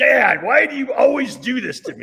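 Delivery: very high, loud put-on pissed-off griping. Retelling a son picking up his drunk father: imitating a pissed-off son. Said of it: "his son shows up and just pissed".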